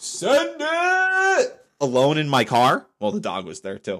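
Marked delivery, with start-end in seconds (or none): 0.0-1.6 mock full-lunged yell, pitched way up and drawn out. Speaker retells screaming a voice-text command alone in the car; screaming at the top of lungs. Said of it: "just screaming".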